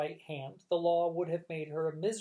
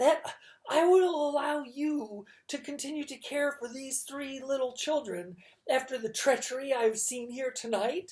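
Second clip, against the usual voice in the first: fed-up, exasperated, pitched-up voice; 8 semitones higher than usual. Reading a story aloud, voicing Mister Poe: exasperated voice. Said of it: "Mister Poe said in an exasperated voice".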